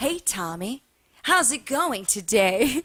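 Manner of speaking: slow, polished on-air newscaster voice. Recalling doing local newscasters' hair in Detroit: imitating a local newscaster voice. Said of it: "they talk to you just like they talk on the news".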